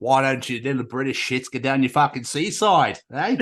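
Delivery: put-on Australian accent. Voicing an Australian on the phone, mock Australian accent. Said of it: "What's the Australian area code?".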